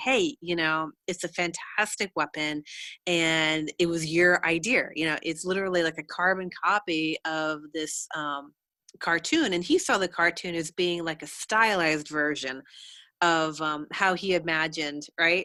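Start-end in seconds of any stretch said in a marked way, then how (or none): none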